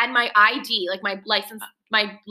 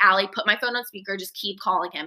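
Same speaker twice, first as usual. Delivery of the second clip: ordinary talk, nothing marked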